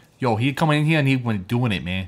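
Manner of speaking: poorly faked Boston accent. Trying a quick impression while the others joke about casting: bad Mark Wahlberg Boston accent. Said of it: "a Boston accent".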